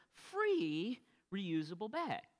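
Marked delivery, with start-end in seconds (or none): 0.3-0.9 heavy stress on the word "free". Recounting offering bags to people at outreach, with stress on 'free'. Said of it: "emphasis on the word".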